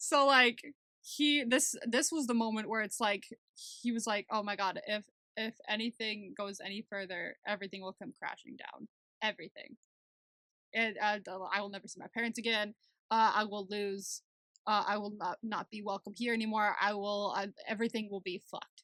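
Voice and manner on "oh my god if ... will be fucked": ordinary delivery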